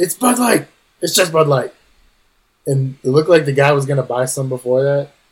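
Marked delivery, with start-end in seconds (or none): 0.0-1.7 yelling, higher pitch. Retelling how a character called out a seller in front of a customer: imitating someone yelling. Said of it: "yells out".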